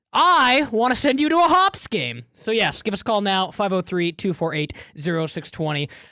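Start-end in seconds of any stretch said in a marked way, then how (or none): 0.1-2.2 put-on voice, pitched up, swooping widely. Between readings of a call-in phone number, a line in Chad voice. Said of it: "In my most Chad voice".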